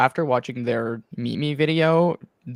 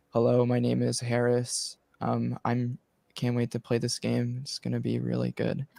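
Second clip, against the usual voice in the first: quiet, droning, flat, toneless monotone; 5 dB quieter than usual. Describing a player's Meet Me video, speaker quotes Harris's quiet monotone. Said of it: "just kind of quiet and just kind of monotone".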